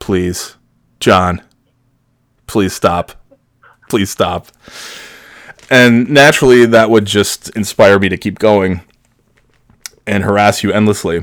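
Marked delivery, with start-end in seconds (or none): 0.0-4.5 mock earnest, begging, repeated pleading. Retelling how a coworker answered the pranks: imitating a coworker pleading. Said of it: "your response was".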